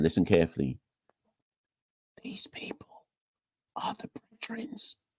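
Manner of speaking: soft, hushed whisper under the breath. A speaker naming those blocking governance change at Cricket West Indies, in a whisper. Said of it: "Let me whisper this one".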